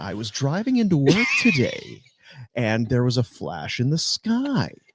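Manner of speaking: on-air radio dj announcer voice. Starting a story for a recorded clip, radio announcer voice. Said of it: "he gets his radio voice on".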